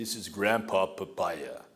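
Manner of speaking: put-on speaking with Jamaican accent. Retelling what a friend said handing over a papaya: Jamaican accent. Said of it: "in his wonderful Jamaican accent said".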